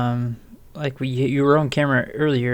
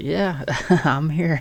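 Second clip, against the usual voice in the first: casual, offhand, unbothered tough-guy voice; 3 semitones higher than usual. Imitating a badly hurt guy shrugging it off: put-on casual tough guy. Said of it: "A guy would be, like, missing an arm and half his leg and be like".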